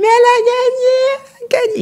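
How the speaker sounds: put-on shouting. Retelling how friends jumped the barrier after a win: imitating friends shouting. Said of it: "elles crient".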